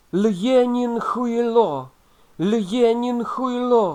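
very loud, very high, drawn-out tearful crying scream. A narrator reads a suspect's shout as an agent grabs him, shouting while crying. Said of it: "кричав заплаканий підозрюваний".

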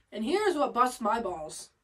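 plain

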